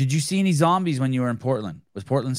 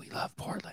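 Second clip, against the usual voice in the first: breathy commercial-style whisper. Retelling months of tournament commercials: imitating a whispered commercial. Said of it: "It would whisper that".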